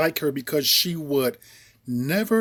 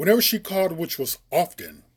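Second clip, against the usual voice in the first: usual speaking voice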